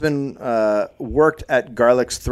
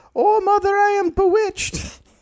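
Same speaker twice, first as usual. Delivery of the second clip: put-on crying out through tears, very high. Storyteller reading a girl's words to her mother, Elizabeth crying out. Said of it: "she put out her hand and cried".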